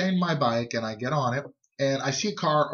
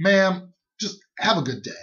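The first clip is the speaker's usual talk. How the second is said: put-on dismissive tone, higher pitched; 5 semitones higher, 4 dB louder than usual. Retelling being followed home from work by a woman: retelling a dismissive brush-off. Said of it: "very dismissive because I just came from work".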